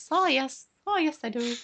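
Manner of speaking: put-on Irish accent. Joking about how irish people talk, showing it in a put-on irish accent. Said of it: "They talk like this".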